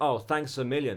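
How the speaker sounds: ordinary talk, nothing marked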